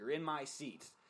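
put-on heavy, broad, thick Boston accent. Retelling what a woman on the bus said to you, in a thick boston accent. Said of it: "in a thick Boston accent goes".

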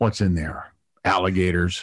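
low, biting sarcastic voice. Retelling what a peeved guy leaned over and said, imitating a sarcastic guy. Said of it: "real sarcastically".

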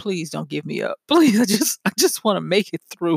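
acted-out, mock pleading voice. Describing celebrities the speaker runs into unawares, acting out their plea: imitating celebrities pleading. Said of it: "They're pleading like".

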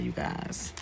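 soft, nearly voiceless, teary, choked-up voice. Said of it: "sorry, I'm getting a little teary-eyed".

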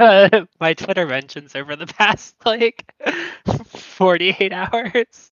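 high, loud speech with laughter through the words.

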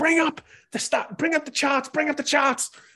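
very high, repeated shouting. Retelling how the captain shouts orders to the crew, retelling shouted orders. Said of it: "And she kind of shouts uh".

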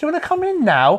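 very high, condescending, patronising voice. Retelling what the lady at the door asked, mimicking a patronising tone. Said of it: "a really patronising tone of voice".

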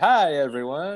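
quacking cartoon duck-like voice. Imitating the terrible cartoon doctor greeting everyone: imitating Doctor Nick from The Simpsons. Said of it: "he's like".

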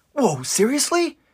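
very high, startled, surprised exclamation. Retelling a scene, acting out Eren's line: Eren asking in surprise. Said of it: "a surprised Eren turns and asks".

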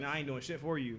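plain

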